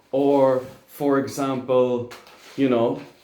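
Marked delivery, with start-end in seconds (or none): none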